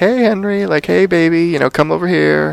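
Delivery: sugary, sweet, high coaxing voice. Retelling how the Evil Queen spoke very nicely to Henry: imitating the Evil Queen sweetly. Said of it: "she actually was very nice to him".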